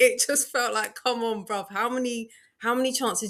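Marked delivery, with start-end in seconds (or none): 0.9-3.3 put-on yell, higher.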